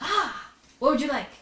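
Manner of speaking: cheery, chirpy innkeeper voice, high and loud. Voicing a halfling barkeep greeting arriving players: chirpy halfling barkeep voice. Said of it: "He's always chirpy".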